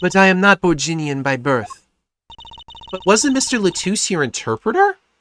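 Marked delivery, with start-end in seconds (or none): 0.0-1.7 fake, vaguely European accent. Voicing a character invited from the Republic of Borginia: vaguely European accent. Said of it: "This is my vaguely, vaguely European accent".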